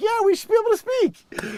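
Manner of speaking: high, loud, mocking put-on voice.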